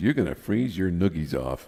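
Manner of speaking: ordinary talk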